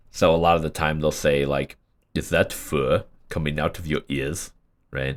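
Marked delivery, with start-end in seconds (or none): 2.1-4.5 odd fake Nordic-sounding accent. Showing what they'll say a lot of the time, in an altered Nordic accent, a bit like Arnold. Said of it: "someone tried to make a like a Nordic accent".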